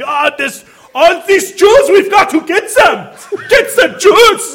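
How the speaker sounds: exaggerated mock German accent, played for comedy. Acting out someone screaming from the top: funny exaggerated German accent. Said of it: "in a funny German accent. It's like, ... Like that".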